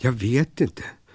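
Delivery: hesitant, hesitating delivery. Asked by a talking pillow to set off on an adventure: hesitant. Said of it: "sa Claes tvekande".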